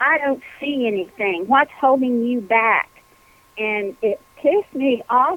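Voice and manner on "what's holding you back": mock screaming, barked but kept reined in. Retelling how a woman in an exercise reacted, imitating someone screaming. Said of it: "screamed in my face".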